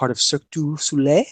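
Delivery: put-on French accent. Quoting how he put it himself, imitating a french accent. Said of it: "in his little French accent".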